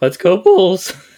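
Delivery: loud cheer with voice cracking, breaking high. Quoting the ending line to a co-speaker who knows it, imitating a voice crack. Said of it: "the voice crack".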